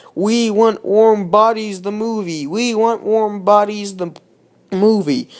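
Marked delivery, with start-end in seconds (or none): none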